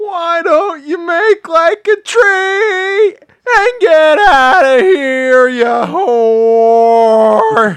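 loud, high bully jeer. Asked by a caller for a Biff line, a Terry Funk voice as Biff. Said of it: "go ahead and do Terry Funk as Biff".

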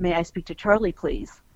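ordinary talk, nothing marked

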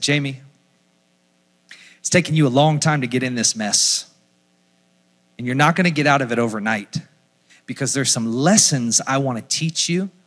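quiet voice. Retelling what he heard after thanking God, soft voice of the Holy Spirit. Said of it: "in the soft voice just said".

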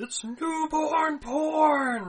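piercing, very loud, very high, drawn-out shrill scream. Retelling a movie scene where a character screams at someone leaving: imitating a scream. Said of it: "Vukmir screams".

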